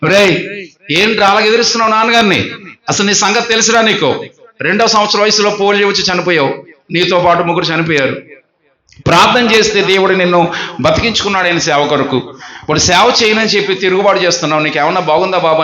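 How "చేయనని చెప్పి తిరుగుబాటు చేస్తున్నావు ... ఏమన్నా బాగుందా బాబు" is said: normal talking voice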